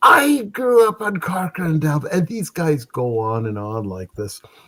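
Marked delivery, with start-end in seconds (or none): 0.0-2.1 put-on high, drunk-sounding voice. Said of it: "McMurphy brothers are drunk again".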